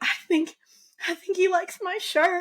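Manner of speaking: high, tearful crying voice, words broken by sobs. Telling of a monkey biting a woman, the speaker quotes her: imitating a woman crying. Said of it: "She's crying".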